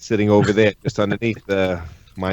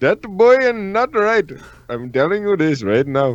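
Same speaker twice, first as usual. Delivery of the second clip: very high, swooping, sing-song Indian accent; 10 semitones higher than usual. Asked by another speaker to say a line as Hank Hill, Hank Hill with Indian accent. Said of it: "Say that boy ain't right".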